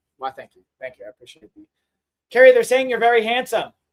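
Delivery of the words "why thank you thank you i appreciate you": very quiet, sarcastic, mock-gracious tone. Thanking commenters who call the speaker very handsome: sarcastic thanks. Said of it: "I'm just saying it sarcastically".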